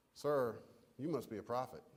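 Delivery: wry, tongue-in-cheek, facetious mocking tone. Imagining how a woman's remark might have sounded, mock-facetious tone. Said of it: "kind of facetiously".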